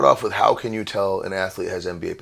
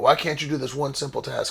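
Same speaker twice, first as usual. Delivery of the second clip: put-on high-pitched screamed voice; 6 semitones higher, 3 dB quieter than usual. Retelling how a dad yells at his son across the court: imitating a dad screaming. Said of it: "he's screaming at his son from across the court".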